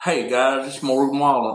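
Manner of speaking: laid-back, drawling surfer voice. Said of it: "all of a sudden he had this like surfer voice".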